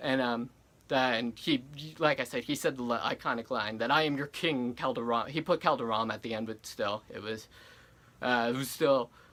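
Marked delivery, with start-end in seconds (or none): none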